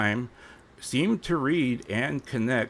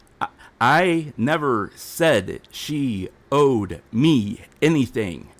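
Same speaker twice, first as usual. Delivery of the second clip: slow, raised, deliberate, spelled out word by word; 6 dB louder than usual. Repeating a statement to the doubters in the audience: said slower. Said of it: "say that a little slower".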